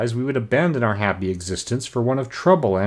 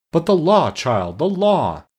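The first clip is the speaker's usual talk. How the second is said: stern voice crying out, pitched up; 5 semitones higher than usual. Ak objects to Necile caring for the babe, crying out sternly. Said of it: "cried Ak sternly".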